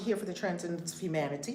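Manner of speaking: rushed, hurried, a little too fast. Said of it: "I said that a little too fast".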